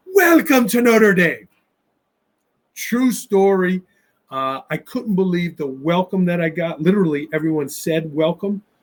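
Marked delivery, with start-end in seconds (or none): 0.1-1.5 Irish brogue, pitched up. Retelling how an old man at the locker room door greeted him: irish brogue. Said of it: "with the Irish brogue".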